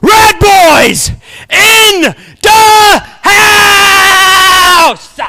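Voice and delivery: with gusto. Saying the catchphrase after being told to put heat on it: with fire. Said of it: "Say it with fire".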